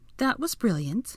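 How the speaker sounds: bone-dry tone. Hermione answers Draco after he scraped her back against the rocks: dryly. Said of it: "Hermione said dryly with a wince".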